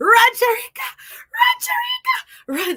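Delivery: put-on very high, loud, drawn-out cheer in Jamaican accent. Retelling own cheering while watching a race: imitating own jamaican accent cheering. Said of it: "my Jamaican accent comes out".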